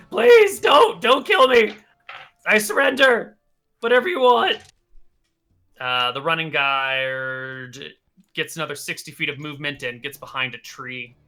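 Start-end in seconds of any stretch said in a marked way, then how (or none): 0.1-4.5 loud, high-pitched, shrill, desperate pleading. Narrating the scene, the speaker voices a guy restrained by webbing; desperate pleading. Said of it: "just starts pleading".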